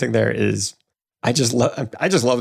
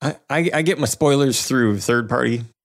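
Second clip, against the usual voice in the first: ordinary delivery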